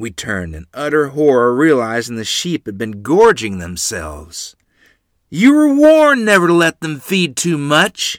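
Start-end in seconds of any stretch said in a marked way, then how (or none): 5.3-8.2 high-pitched, loud, bellowing roar. Man scolding two children over the gorged sheep, roaring. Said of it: "he roared".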